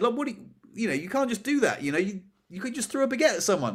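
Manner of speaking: put-on furious scolding. Retelling how a boss told off a rude customer: imitating a boss scolding angrily. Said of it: "you had a massive go at him".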